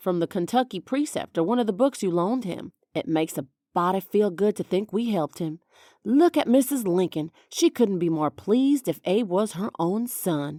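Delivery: ordinary delivery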